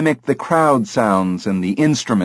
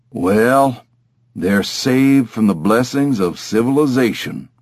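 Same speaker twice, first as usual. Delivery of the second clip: unhurried cowboy drawl. Reading a story, the parrot speaks while staring out the window: cowboy drawl. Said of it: "he said in a cowboy drawl".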